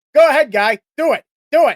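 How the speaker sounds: bad, rough, high, loud Boston accent. Imagining how he probably sounded to Freddy, speak as Edgar Allan Poe with a bad Boston accent. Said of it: "I can't do a Boston accent".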